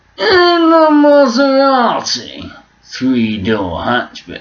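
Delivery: very high, slow, drawn-out words with hanging pauses. Imitating Jeremy Clarkson describing a Maserati, hanging pauses between words. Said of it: "he does a lot of this hanging on words".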